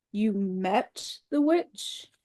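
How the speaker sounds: low voice with a growl behind it. Hearing that someone met the witch, low voice with threatening growl. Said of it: "said Aslan in a low voice, which had the threat of a growl in it".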